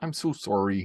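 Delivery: drawn-out, put-on Canadian accent. Joking in conversation, putting on a Canadian voice. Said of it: "pull out my Canadian voice and say".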